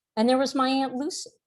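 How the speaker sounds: ordinary talk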